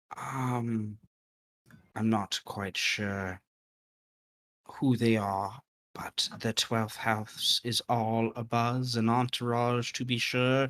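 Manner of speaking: hushed half-whisper with a drawn-out um. A woman from behind the bar pulls you aside by a table: half-whispering. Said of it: "she goes into your shoulder and whispers".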